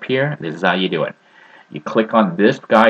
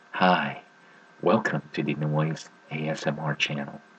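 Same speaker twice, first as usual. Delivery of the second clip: low, put-on seductive, sexy voice; 4 semitones lower, 10 dB quieter than usual. Welcoming viewers to an ASMR channel in a put-on sexy voice. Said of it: "Maybe if I talk in a sexy voice".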